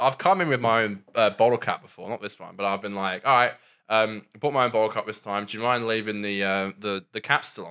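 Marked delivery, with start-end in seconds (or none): none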